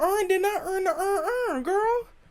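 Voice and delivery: thick, exaggerated country accent, pitched high. Comparing accents, demonstrating an exaggerated country accent. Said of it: "if you get to a point where it's too country".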